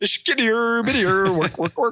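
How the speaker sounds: put-on puppet-like gibberish voice. Asked about The Muppet Show, a guest does a Swedish Chef impression. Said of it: "You're good at Muppet impersonations".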